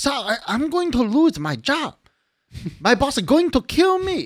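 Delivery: very high, slow, pleading put-on Chinese accent. Retelling talking to a customer who canceled a pickup food order, in a put-on chinese accent. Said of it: "I start going in with this accent".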